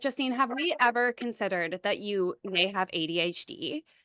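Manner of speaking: plain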